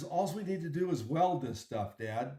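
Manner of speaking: ordinary talk, nothing marked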